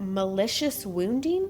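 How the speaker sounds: plain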